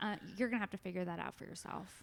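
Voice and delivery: completely straight-faced, dead serious deadpan, no joking. Retelling a friend's reply about how to say a joke tag: imitating Frank dead serious. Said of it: "he looks at me dead serious".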